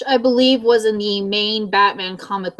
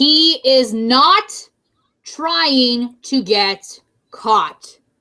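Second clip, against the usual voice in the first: very slow, deliberate, each word laid out; 4 semitones higher than usual. Addressing the audience, saying this one point very slowly. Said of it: "I'm going to say this very slowly".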